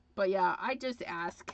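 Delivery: ordinary delivery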